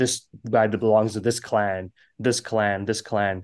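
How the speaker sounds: put-on, bland, generic narrator voice. Complaining about long exposition, imitating a generic narrator voice. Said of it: "like a generic narrator voice".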